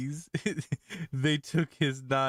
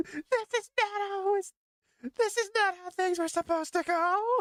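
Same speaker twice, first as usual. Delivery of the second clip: put-on scream, much higher. Retelling how he screamed at the other teammates, retelling someone screaming. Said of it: "Just him just screaming at the other teammates".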